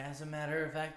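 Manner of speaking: plain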